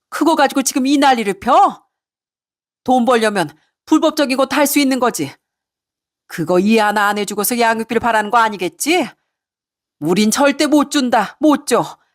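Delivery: high-pitched screaming, bellowing at the top of her lungs. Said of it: "고래고래 소리치는 시모의 전화".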